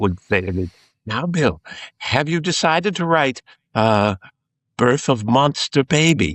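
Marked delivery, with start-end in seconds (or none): 1.1-6.3 put-on high, lilting English woman's accent. Quoting an English woman asking whether he wrote it: imitating Frances Dole's English accent. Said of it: "an English woman with a wonderful accent".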